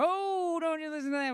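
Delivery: very high, shrill, booming auctioneer-style patter. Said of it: "he would also speak over like that".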